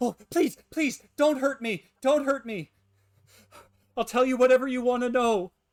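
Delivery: very high, very loud, shrill, terrified, panicked voice. Storyteller voicing the mayor after he slams himself back in fear, terrified pleading. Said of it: "the mayor seems to be just terrified".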